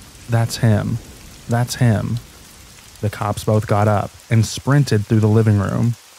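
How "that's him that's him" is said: ordinary talk, nothing marked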